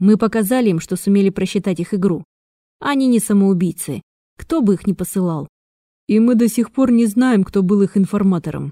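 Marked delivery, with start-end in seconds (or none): none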